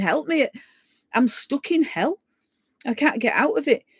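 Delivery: desperate, high-pitched, panicking plea. Recalling being stuck and unable to get out, retelling panicked pleading. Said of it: "I'm panicking and going".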